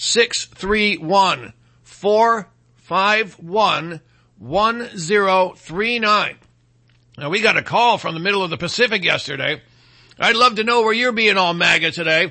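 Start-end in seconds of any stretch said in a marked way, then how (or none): 0.0-6.4 very slow, deliberate, drawn out piece by piece. Repeating the call-in number a second time for the listeners: slower. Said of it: "I'll say the number again slower".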